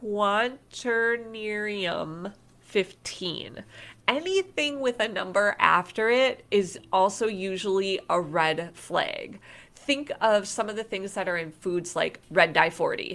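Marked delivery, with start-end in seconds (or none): 0.0-3.6 slow, deliberate, carefully sounded-out pronunciation. Speaker listing ingredients to avoid, saying a hard word slowly. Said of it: "bear with me as I say this slowly".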